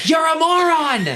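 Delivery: shrill, very high, shrieking scream. Imagining online edits of Judge Judy screaming at oneself: Judge Judy screaming. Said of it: "Judge Judy screaming at me like".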